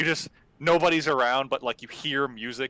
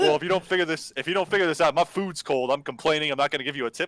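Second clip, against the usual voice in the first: put-on irate, angry, complaining rant; 3 semitones higher than usual. Retelling a phone call about a missing gate code: imitating her getting mad. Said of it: "she got so mad, dude".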